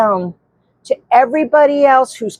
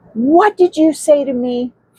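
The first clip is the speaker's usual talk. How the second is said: acted angry man's voice, higher pitch. Retelling what a man snapped back at the speaker, imitating an angry man. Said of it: "he was so mad at me".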